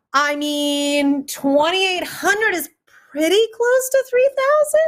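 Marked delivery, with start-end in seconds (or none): 1.2-4.8 very high-pitched squeaky voice, rising. While asking for donations, speaker states a total in a very high-pitched voice. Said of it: "she said with a very high-pitched voice".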